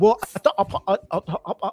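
put-on, mocking British accent. Imitating British actors talking in interviews: imitating a British accent. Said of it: "they just be".

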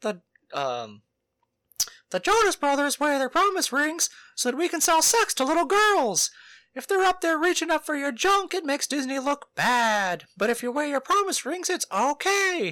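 very high pitch, loud and swooping. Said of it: "And he's like".

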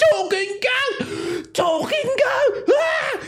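very high, drawn-out shriek, climbing in pitch. Voicing a townsperson who screams about a talking goat: screaming in character. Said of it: "he's just kinda screaming".

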